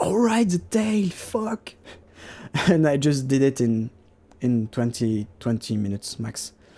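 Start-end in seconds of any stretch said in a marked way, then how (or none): 0.0-1.7 high, slow sudden realization. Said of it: "I was".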